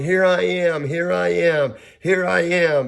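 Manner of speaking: hollering, high-pitched and slow. Retelling answering when someone called their name in the dark: imitating own hollering. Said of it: "I started hollering".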